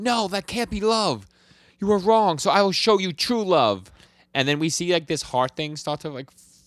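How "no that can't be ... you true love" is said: high, loud, shrill screaming outburst. Retelling an anime scene where she screams: imitating a character screaming. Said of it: "And she screams".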